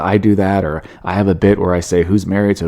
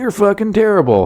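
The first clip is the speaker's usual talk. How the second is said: mock, high, yelled shouting; 12 semitones higher than usual. New stand-up recalls a bad set, acting out a heckle: imitating a heckler yelling out. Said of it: "if you would have yelled out".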